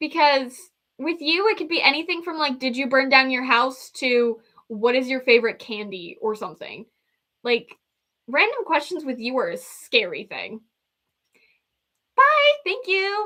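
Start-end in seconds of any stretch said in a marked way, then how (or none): 12.2-13.3 voice jumping suddenly very high and shrill. Speaker saying a quick goodbye: suddenly high-pitched voice. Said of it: "why did my voice get high pitched?".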